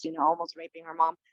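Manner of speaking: usual speaking voice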